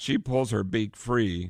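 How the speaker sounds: ordinary delivery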